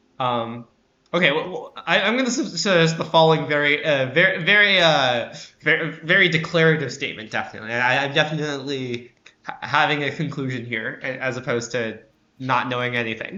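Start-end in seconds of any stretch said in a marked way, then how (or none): 1.8-13.4 loud, mock-emphatic, heavily laid-on sarcasm. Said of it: "to be clear, that was sarcasm".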